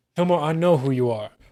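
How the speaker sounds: plain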